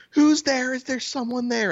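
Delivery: play-acted, very high, repeated yelling. Retelling the neighbor calling out from upstairs: imitating someone yelling. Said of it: "she just keeps yelling".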